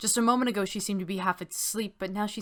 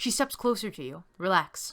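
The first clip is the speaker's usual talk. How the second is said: usual speaking voice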